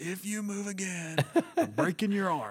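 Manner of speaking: mock raging, high-pitched, furious yell. Retelling how a golfer went off on a volunteer: imitating a golfer yelling. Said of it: "in front of everybody yelling".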